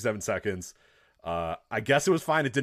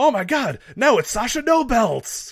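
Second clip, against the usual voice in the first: high, drawn-out, shrill mock commentator scream; 13 semitones higher, 7 dB louder than usual. Complaining about a commentator's catchphrase, imitating Corey Graves screaming. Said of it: "Corey Graves screaming".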